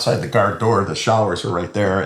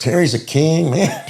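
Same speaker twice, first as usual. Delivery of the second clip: higher-pitched put-on Puerto Rican accent; 8 semitones higher than usual. Retelling what Carlos said during a face-off: Puerto Rican accent. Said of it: "Puerto Rican with his accent".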